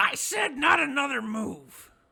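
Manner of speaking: very high, very loud, shrill goblin yell. Voicing a goblin who yells at an intruder to stop: goblin yelling. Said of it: "Yimik just yells in common".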